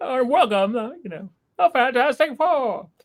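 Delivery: put-on very high, vintage, old-timey announcer voice-over. Imitating the opening scene's voice-over: imitating an old-timey voice-over. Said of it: "With that old-timey, old-timey voice a-, over".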